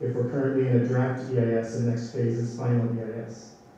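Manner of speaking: ordinary talk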